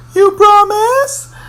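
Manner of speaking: very high, slow, whiny pleading. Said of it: "And she's like".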